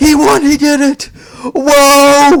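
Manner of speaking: very high, very slow, stretched excited "whoa". Retelling an announcer's call after a match win: imitating a high-pitched excited call. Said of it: "high-pitched, like, voice".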